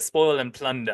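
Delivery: put-on British accent. Quoting a man's line while retelling what he says, British accent. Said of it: "And he's British, so he says".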